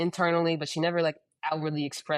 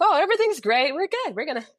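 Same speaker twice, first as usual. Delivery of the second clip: very high, laughing, cheery, dismissive tone. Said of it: "She's like".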